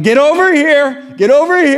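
very high, loud yelling. Telling a hike story, speaker quotes a mom calling her kids over: imitating a mom yelling. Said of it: "the mom is yelling".

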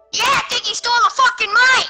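full-on, high-pitched screaming. Teasing another player about his microphone in voice chat: screaming. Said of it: "Can you stop screaming?".

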